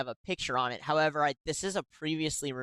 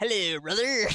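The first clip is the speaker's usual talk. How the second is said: loud, high-pitched put-on alien voice; 6 semitones higher, 6 dB louder than usual. Joking about what the other speaker wants to see: put-on alien voice. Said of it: "with an alien going".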